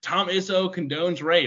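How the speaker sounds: drawn-out, drawled, heckling yell like a fan. Imitating an annoying student section fan yelling at basketball games: imitating a student yelling. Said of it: "immediately yelling, like".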